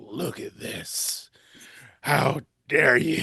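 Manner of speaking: put-on, slow, appalled, disgusted voice. Retelling a customer bringing back an oyster with a pea crab: imitating a disgusted customer. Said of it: "she had this look of disgust on her face".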